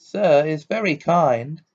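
high-pitched, squeaky elf voice. A narrator reads Dobby's reply to Ron about a gift, in a squeaky Dobby voice. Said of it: "he squeaked".

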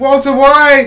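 excited, high, loud shout.

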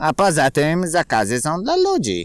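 brazen, cheeky, insolent, swooping, drawn-out delivery. The little rat answers a man who says forest fires are forbidden: insolent reply. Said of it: "odparł bezczelnie szczurek".

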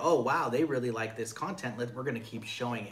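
ordinary talk

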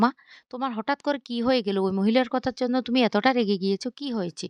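ordinary talk

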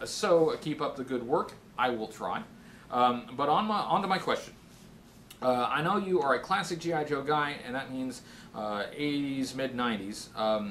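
ordinary talk, nothing marked

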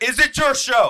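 very high, loud, slow, mocking tone.

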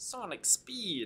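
very high-pitched cartoon-style voice. Commentating a match against a Sonic player: Sonic impression. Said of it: "It's my Sonic impression".

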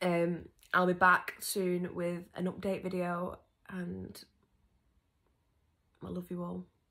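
voice holding back tears. Signing off to viewers at the end of a video, holding back tears. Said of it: "My nose is running because I'm trying not to cry".

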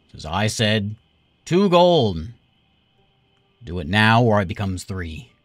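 authoritative tone. Running a role-play game, the speaker voices a booming voice. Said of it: "Another booming voice".

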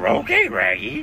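full-blown, high-pitched cartoon dog voice. Doing an impression in a voice message: Scooby-Doo voice. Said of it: "full-blown Shaggy and Scooby".

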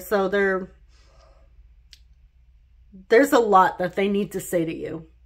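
choking up, throat tight with emotion. Telling a listener about their person, the speaker is suddenly choked up. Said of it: "I'm getting choked up all of a sudden".

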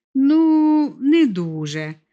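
grudging, unwilling. A son answers his mother's question about his grandmother, reluctant reply. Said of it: "неохоче відповів Вітя".

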